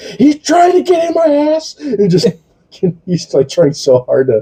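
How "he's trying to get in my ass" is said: very high-pitched, freaked-out panicked outburst. Retelling a TV episode scene, the speaker acts out Frenchie freaking out. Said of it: "Frenchie starts freaking the fuck out".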